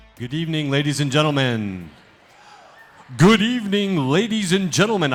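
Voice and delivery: broadcast-style radio announcer host voice. Host opening a live storytelling event, radio announcer voice. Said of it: "I got my radio voice on".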